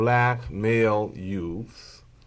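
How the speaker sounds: very slow, deliberate delivery.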